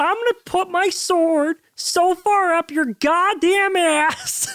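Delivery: put-on frog puppet voice. Acting out an angry blood hunter: Kermit the Frog voice. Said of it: "it sounds like Kermit the Frog".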